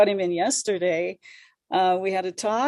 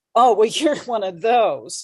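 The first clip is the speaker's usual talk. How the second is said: put-on derisive, mocking, teasing tone; 4 dB louder than usual. Retelling how he made fun of small drinking habits: imitating someone mocking. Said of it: "he started making fun of me".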